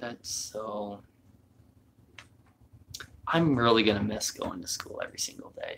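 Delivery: tearful voice. Speaking to the camera about a class ending for good, crying. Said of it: "I'm crying".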